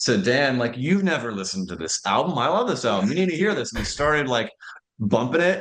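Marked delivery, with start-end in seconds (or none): 0.8-3.7 mock eager, fast, excited, rising gush. Retelling how someone urged a friend to hear an album: imitating Jesse excitedly. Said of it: "Jesse very excitedly was like".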